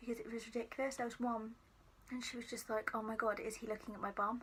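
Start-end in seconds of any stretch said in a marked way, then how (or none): none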